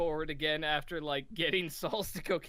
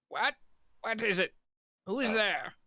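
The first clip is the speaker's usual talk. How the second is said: put-on confused, high, startled old wizard voice; 6 semitones higher than usual. Narrating the scene, the speaker voices the old man opening the door: old wizard voice.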